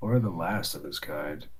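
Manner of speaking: low, soft muttered aside under the breath. Voicing a character's aside after another character's boast: mumbling under his breath. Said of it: "Cade mumbles under his breath".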